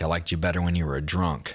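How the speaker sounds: ordinary talk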